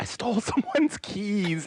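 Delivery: mock very high, drawn-out, frantic panic. Acting out being the one frantically calling about stolen keys: frantic phone call. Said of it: "you don't wanna be the one frantically calling".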